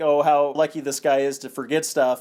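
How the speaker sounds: ordinary talk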